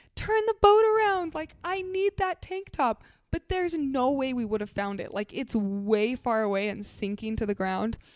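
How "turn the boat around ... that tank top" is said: put-on shrill, very high, loud, frantic screaming. Retelling a storm story, acting out a woman yelling at her husband, retelling a yell. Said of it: "she's yelling at her husband".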